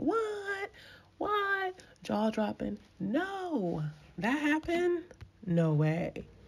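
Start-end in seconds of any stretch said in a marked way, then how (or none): 0.0-5.0 very high, sing-song, drawn-out screaming. Retelling reacting to an interview on screen: imitating own screaming at screen. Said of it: "I was screaming at the screen like".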